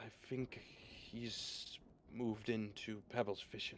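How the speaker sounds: hushed, whispered aside. Flying beside a companion, a character passes on what he noticed, whispering. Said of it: "He'll whisper towards you".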